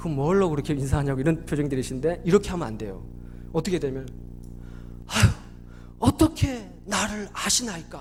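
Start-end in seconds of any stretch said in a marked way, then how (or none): 5.1-8.0 stunned, startled, caught-off-guard astonished wonder. Explaining Nathanael's words about Jesus, the speaker is acting startled and astonished. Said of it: "어떤 뉘앙스입니까? 깜짝 놀라잖아요".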